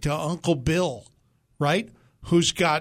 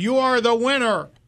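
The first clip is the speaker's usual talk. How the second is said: loud raised yell, pitched up; 7 semitones higher, 4 dB louder than usual. Telling a caller who can barely hear that he won: yelling to be heard. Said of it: "I'm gonna yell at you then".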